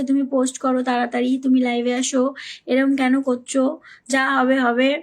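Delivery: plain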